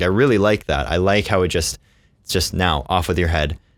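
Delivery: normal talking voice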